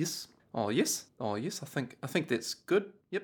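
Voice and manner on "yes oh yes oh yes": put-on New Zealand accent, lower, quieter. Giving an accent lesson, the speaker demonstrates a New Zealand accent. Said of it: "because New Zealanders don't say vowels".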